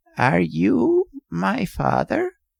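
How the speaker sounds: slow, creaky, cracked ancient rasping voice. Reading a story aloud, voicing the old man: cracked, ancient voice. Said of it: "spoke in a cracked and ancient voice".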